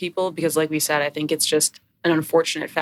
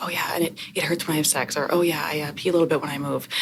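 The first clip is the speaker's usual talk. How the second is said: put-on whispering voice. Retelling what patients say during their history: imitating patients whispering. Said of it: "in a whisper".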